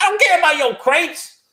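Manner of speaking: very high, swooping, terrible put-on hillbilly accent. Describing shotgun units that ignore cover, the speaker voices them in a terrible hillbilly voice. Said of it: "that was a terrible uh, hillbilly voice".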